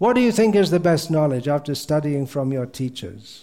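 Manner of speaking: plain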